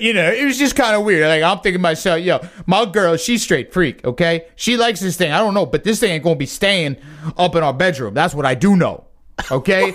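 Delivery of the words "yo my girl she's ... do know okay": ordinary talk, nothing marked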